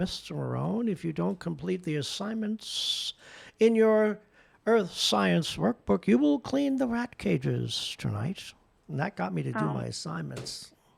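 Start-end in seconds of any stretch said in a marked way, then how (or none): 0.0-8.4 put-on whistling voice. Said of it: "he had this whistle in his voice".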